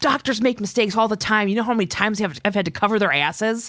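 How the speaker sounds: mock furious outburst, high, upset yelling. Retelling a TV scene where Hope stands up upset: imitating Hope yelling. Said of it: "starts yelling at".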